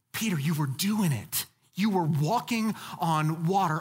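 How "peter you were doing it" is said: encouraging, lifted voice. Showing how to read Jesus's words to Peter on the water: read as encouragement. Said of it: "Read it as an encouragement here. Read it like this".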